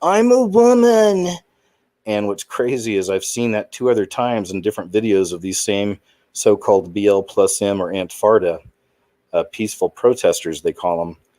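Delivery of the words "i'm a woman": shrill, very high, loud screaming cry. Describing a protest video to listeners, imitating a man screaming. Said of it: "he starts screaming".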